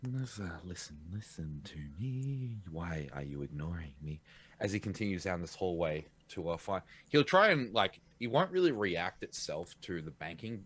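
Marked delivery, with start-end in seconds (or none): 0.0-4.2 slow, low, hushed half-whisper. Voicing a character on the hunt, walking a hallway: half-whispering to himself. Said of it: "whispering to himself".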